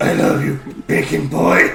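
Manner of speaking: very deep, very low, gravelly outside voice. Retelling what he says out loud to bacon boy, in a gravelly external voice. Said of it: "with his external voice, which is much more gravelly".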